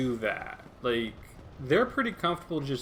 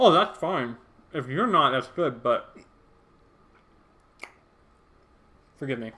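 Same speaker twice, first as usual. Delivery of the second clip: mouth full, chewing, louder and slower; 6 dB louder than usual. Speaker answering a commenter while eating, talking with mouth full. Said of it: "I'm eating with my mouth full".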